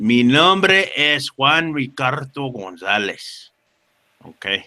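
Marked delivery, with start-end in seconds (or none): 0.0-3.5 proper native Spanish pronunciation. Saying own name for the chat the proper way: proper Spanish pronunciation. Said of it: "I should say it the proper way".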